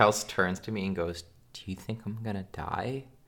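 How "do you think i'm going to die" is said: dead-serious, fully earnest tone. Retelling what Kels asked while sick, imitating in full seriousness. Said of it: "In full seriousness".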